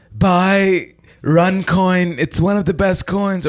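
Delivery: lisping, slow, high-pitched, stretched-out "buy". Describing an ad where Trudeau sponsors a coin: lispy Trudeau impression. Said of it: "That sounds like Trump. / It was like a lispy Trump".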